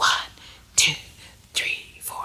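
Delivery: quiet whispering. Showing a group how to whisper the counts: whispering. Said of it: "have a whispering tone like this".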